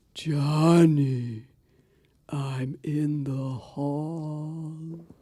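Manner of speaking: eerie, ghostly, wind-borne voice, "hall" drawn out. A narrator telling a ghost story voices the dead man calling to johnny, ghost voice like the wind. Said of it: "It's [name], [name]. [name]? Yes. I want my liver back. / It's [name], / The grave belonged to old Mr. / almost as if on the voice of the wind, / [name]".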